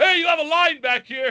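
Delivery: loud yell pitched very high. Retelling calling out to a lady in a line: retelling a yell. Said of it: "so I just yelled".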